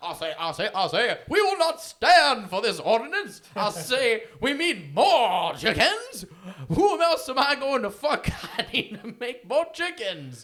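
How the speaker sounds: very loud, swooping, booming cartoon rooster holler. Joking about a pro-chicken lobby's mascot: Foghorn Leghorn voice. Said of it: "I'm Foghorn Leghorn".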